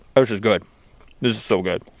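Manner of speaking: speaking through a mouthful of food. Eating on their channel, the speaker tells viewers: talking with mouth full. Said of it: "mouthful or not".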